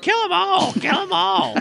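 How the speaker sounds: very high, wild, screaming bird screech. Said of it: "Alucard screaming".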